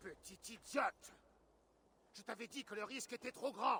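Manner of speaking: furious, high-pitched, angry voice. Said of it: "Du calme, Guthrum".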